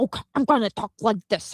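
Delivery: put-on grating, mannered way of talking. Complaining about how Andrew Tate talks, imitating Andrew Tate's way of talking. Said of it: "the way that he talks, and he's like".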